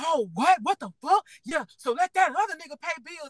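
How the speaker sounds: play-acted angry, outraged, high furious hollering. Retelling how Eddie reacted to the speaker's drunk talk: imitating Eddie's furious hollering. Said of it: "Eddie gets furious and started hollering".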